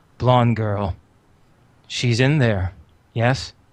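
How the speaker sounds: patient, low, rumbling delivery. Game master voicing a character who meets the party; quiet, patient, low rumbling voice. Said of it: "in a quiet, patient, low rumbling voice".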